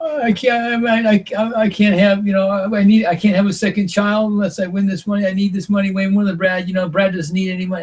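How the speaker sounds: high, tearful, crying, begging tone. Retelling how Sarah pleaded over the vote: imitating Sarah crying. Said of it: "she starts crying and saying".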